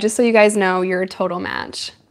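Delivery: normal talking voice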